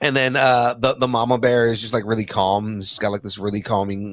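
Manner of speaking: ordinary delivery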